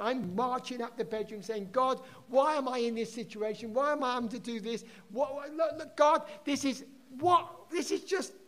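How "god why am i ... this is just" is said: mock exasperated, angry, pitched-up rant, breaking off. Retelling marching up the bedroom complaining to God: retelling an angry outburst. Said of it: "I got really angry with God".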